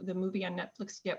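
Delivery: normal talking voice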